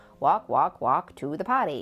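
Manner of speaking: loud, clumsy, bad put-on American accent. Retelling how a small child mimicked a phone avatar, in a bad American accent. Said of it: "So he sounded very American".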